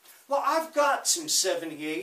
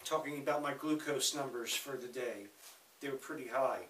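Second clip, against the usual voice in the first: fast, rushed talk. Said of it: "that's why I'm talking so fast".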